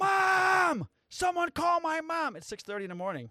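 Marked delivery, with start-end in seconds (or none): 0.0-2.4 very high, shrill top-of-lungs scream, one word drawn out. Retelling a man fighting the speaker's boss, imitating someone yelling. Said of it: "yelling at the top of his lungs".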